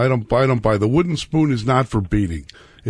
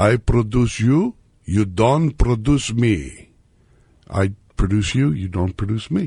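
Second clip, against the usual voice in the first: put-on slow, deliberate older man's Greek accent. Retelling his grandfather's saying, in a Greek accent. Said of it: "you don't have to use the Greek accent".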